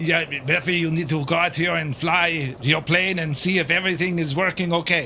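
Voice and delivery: put-on French accent throughout, in English. Acting out the French telling Becky to fly her plane, in a put-on French accent. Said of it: "I can't even do a French accent without offending someone. I'll give it a go anyway".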